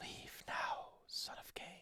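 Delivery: ghostly whispering. Voicing the whispers heard in a haunted place: eerie whisper.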